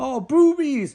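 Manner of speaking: put-on worked-up, overexcited outburst, high and loud. Retelling a movie scene where guys see a woman: imitating guys freaking out. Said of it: "they start freaking out".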